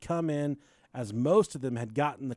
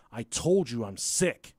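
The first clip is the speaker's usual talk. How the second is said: put-on, nastiest, meanest possible voice; 3 semitones lower than usual. Recounting a sick girl's reply at school, imitating her mean, nasty voice. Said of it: "with the fucking meanest, nastiest voice ever".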